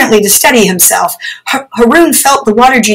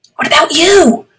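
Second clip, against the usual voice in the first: hushed whisper, much higher; 6 semitones higher than usual. Replying to the water genie who whispered to him, he whispers back. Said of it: "Haroon whispered back".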